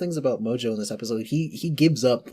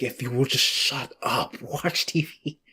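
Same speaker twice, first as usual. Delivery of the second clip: put-on fed-up cartoon villain voice. Retelling a favorite cartoon scene: fed-up Mojo line reading. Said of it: "Mojo's, like, fed up line reading".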